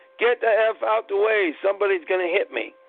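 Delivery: ordinary talk, nothing marked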